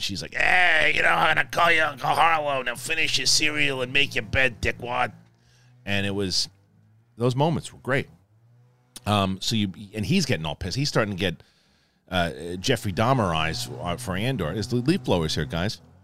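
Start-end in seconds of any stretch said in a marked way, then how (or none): 0.3-5.1 put-on smoker's Brooklyn accent, much higher. Retelling what a mother said, in an imperial-brooklyn smoker's accent. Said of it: "a cross between like an imperial accent and a Brooklyn accent".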